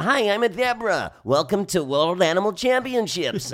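crazy cartoon zebra voice, very high, loud, drawn-out. Recalling the made-up voices done while trying to get work in LA: crazy zebra voice. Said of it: "I'm doing a crazy like".

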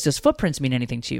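plain

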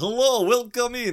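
put-on Transylvanian accent. Discussing the 1932 Dracula movie, doing a Dracula Transylvanian accent. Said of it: "It's like the Romanian Transylvanian".

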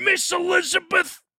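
loud calling-out voice, high pitched. Quoting what Randy Savage said a lot: Randy Savage voice. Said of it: "something that I know Randy Savage said".

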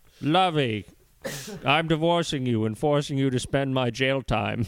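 purely evil character voice. Redoing a mocking line in the right voice: evil Thurston Howell voice. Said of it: "It's like an evil Thurston Howell".

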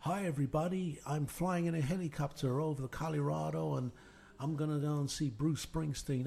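full put-on American accent, radio host style. Imitating a late-night radio host's show in a put-on american accent. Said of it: "Nicky Horn didn't have an American accent, that's just me".

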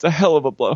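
mock tearful smiling delivery. Retelling a woman's line from a show: imitating someone fighting back tears. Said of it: "kinda smiles, like she's, like, fighting back tears".

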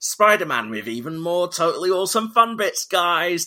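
parody of cringy marketing voice. Mocking a film's return to cinemas with an extended cut: mock cringy promo voice. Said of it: "with a really cringy, like".

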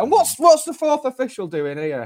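very high, octave-up voice. Describing confusion over a sending-off, quoting John: voice going up an octave. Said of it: "John's voice kind of goes up an octave".

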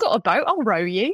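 put-on West Country Devon accent. Retelling what an old man said after finishing his pint, thick Devon accent. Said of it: "in the thickest Devon accent is like".

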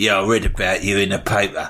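hard-nosed, tough convict voice.

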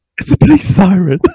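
shaken, crying-laughing voice, high and fast.

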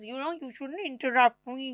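slow lecturing tone. Imitating the other speaker's lecture about interrupting: imitating the other speaker lecturing. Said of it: "that's remarkable impression".

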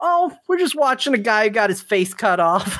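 high voice, calling out. Retelling how her son called out to his mother: imitating a boy yelling out. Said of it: "he yells out".

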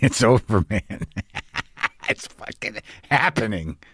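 laughing through tears. Speaker tells the other person it's happening, crying and laughing at once. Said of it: "I'm crying and laughing at the same time".

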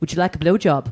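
matter-of-fact Irish brogue. Speaker retelling what a man following her on the street said, in an Irish accent. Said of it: "in this Irish accent".

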